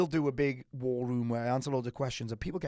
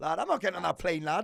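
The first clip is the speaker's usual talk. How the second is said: put-on Scouse accent, pitched up; 5 semitones higher than usual. Joking with friends about doing a scouse accent; attempted scouse accent. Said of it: "Is that your Scouse accent?".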